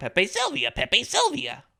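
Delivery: very high, creaky, scratchy swooping cry. Describing a conspiracy board with connecting wires: Charlie Day impression. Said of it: "my best Charlie Day impression".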